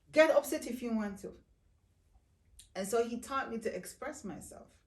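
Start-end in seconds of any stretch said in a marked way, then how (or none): 0.2-1.4 loud, high-pitched, insistent voice. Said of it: "he would insist".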